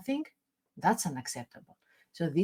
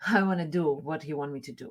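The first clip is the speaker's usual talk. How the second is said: usual speaking voice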